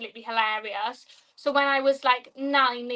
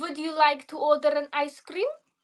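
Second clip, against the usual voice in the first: bad put-on Russian accent; 3 semitones higher than usual. Asked to do their Russian accent, the speaker tries it. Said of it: "do it in your Russian accent".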